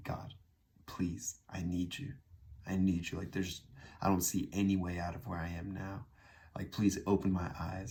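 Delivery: desperate, tearful crying voice. Retelling a past prayer to God: reenacting a desperate crying prayer. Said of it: "a desperate cry".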